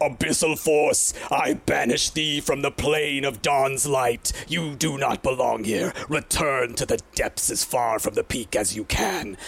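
grand, powerful, righteous, commanding voice. Narrating a scene to players, voicing a character who speaks in a booming voice. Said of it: "you hear in this booming voice".

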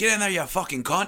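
put-on Australian accent, high. Riffing in a group, delivering a line in a put-on Australian accent. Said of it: "In an Australian accent".

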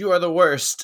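loud, high-pitched yelling. Quoting a movie character yelling at another character, retelling a yell. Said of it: "when he's yelling at Nebula".

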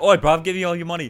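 put-on British accent. Imagining being mugged in a dark alleyway, imitating a British accent. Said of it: "in a dark alleyway in Britain".

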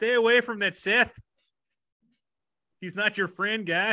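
put-on Canadian accent. Podcast host mocking accent slips in a movie, in a canadian accent. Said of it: "some a Canadian accent slip through".

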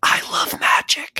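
put-on hushed, childlike whisper in a little-kid style. Reminding Zach how drunk he was last night, imitating Zach whispering. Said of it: "you whispered".

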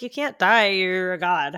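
ordinary talk

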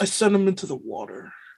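soft, hushed, held-back delivery under the breath. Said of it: "You're sounding like Buffalo Bill right now".

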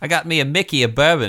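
put-on Australian accent, played up for comic effect. Joking that asking for a mickey of bourbon sounds australian: put-on australian accent. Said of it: "That actually sounds Australian".

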